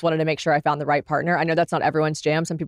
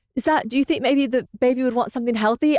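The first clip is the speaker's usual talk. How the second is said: put-on British accent, pitched up; 7 semitones higher than usual. Retelling what James would say during her first trimester: British accent. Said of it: "That's why I'm doing the accent".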